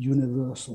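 low, quiet, indistinct mumbled word. Finding the word hackneyed, the speaker says it as muttered 'universal'. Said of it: "I'll mutter it".

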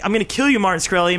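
normal talking voice

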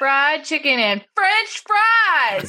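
sing-song, lilting delivery. Correcting how a line from the film is delivered: imitating a sing-song delivery. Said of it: "he was pretty sing-songy about it".

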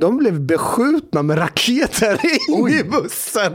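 laughing through the words. Recounting what a bus coordinator told you, laughing while speaking. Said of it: "Förlåt, jag skrattar".

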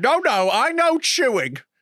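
mock-angry insistent tone. Commenting on a man's rant while watching him, in mock-angry insistence. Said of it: "I love how angry he's got".

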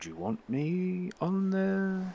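very quiet, very high, slow under-the-breath mutter. Game master voicing Ferrin, who speaks to a player coming aboard: under his breath. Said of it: "under his breath".

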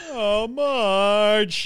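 cartoon dad voice with one word dragged out. Asked by the others to do a voice, the speaker does a Homer impression. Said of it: "do Homer for us".

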